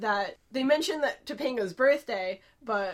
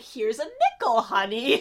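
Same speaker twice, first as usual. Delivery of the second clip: mock patronizing, slow, swooping condescension; 4 dB louder than usual. Retelling a scene where Augie asks for money: condescending Topanga imitation. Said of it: "Topanga is kinda condescending".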